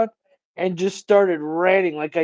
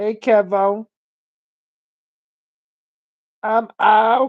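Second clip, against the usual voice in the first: put-on bad childlike voice impression, higher-pitched; 4 semitones higher, 3 dB louder than usual. Trying to talk like a kid, admitting it's bad: bad kid voice impression. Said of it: "you see how bad that fucking impre-".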